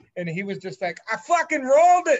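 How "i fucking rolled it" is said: put-on heavy Boston accent, very loud, shrill, high yell. Speaker quotes a man chirping the group over the phone, in a thick Boston accent. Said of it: "so he had a thick Boston accent".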